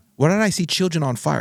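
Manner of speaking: put-on angry ranting. Retelling what an enraged father asked on the phone: imitating someone raging. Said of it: "he was just raging".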